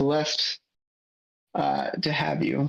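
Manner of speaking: slow, dry, understated sarcastic tone. Joining a conversation late, saying a line in a subtly sarcastic tone. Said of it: "I'll say this in the more sarcastic tones".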